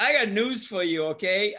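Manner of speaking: normal talking voice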